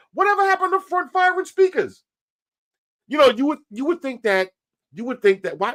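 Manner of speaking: high-pitched, lifted put-on voice. Looking back at old phones from past videos, in a high-pitched voice. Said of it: "let me take it down from the high voice".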